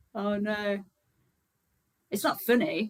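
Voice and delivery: words broken up by laughter. Reacting to someone who lost their voice shouting, laughing while talking. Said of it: "I don't know why I'm laughing".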